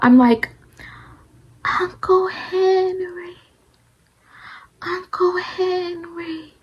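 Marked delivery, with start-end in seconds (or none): 1.8-6.4 feeble, very high, very slow, drawn-out call. Retelling being unable to talk while calling for an uncle: imitating a weak, barely audible call. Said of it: "that's how I'm saying it".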